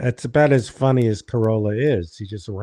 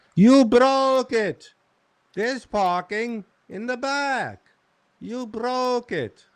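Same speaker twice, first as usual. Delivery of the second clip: put-on very high older voice; 13 semitones higher than usual. The speaker does an impression of an old landlord. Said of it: "my impression of my old landlord".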